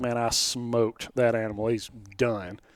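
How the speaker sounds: ordinary delivery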